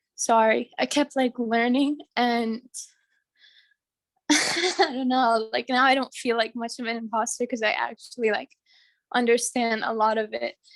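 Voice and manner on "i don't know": slow, tearful catch in the voice. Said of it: "I don't know why I'm getting emotional".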